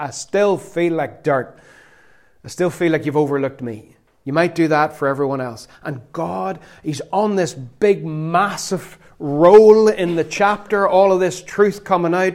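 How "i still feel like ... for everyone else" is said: ordinary delivery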